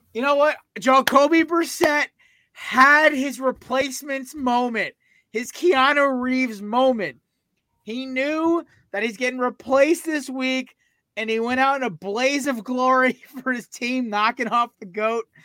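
words pushed through held-back laughter. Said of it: "I'll try not to laugh".

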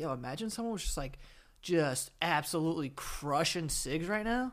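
ordinary talk, nothing marked

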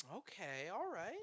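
very quiet, soft, patronizing condescension. In a game, one player agrees to a plan about a ghost: kind of patronizing. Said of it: "You sound kind of patronizing right now".

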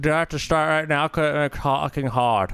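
talking with mouth hanging agape. Speaking in a skit where everyone must keep mouths open: talking with mouth open. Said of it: "Close your mouth".

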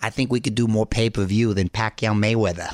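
put-on Boston accent throughout. Retelling what a movie star said the other day, in Mark Wahlberg Boston accent. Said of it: "with his Boston accent".

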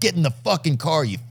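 aggressive hard-sell car salesman. Picturing the other speaker beating someone into the car: acting as an aggressive car salesman. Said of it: "You're like".

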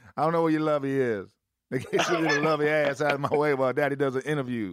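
put-on Southern drawl. Mimicking the other speaker's talk as a joke: mock Southern accent. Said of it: "You don't talk like that at all".

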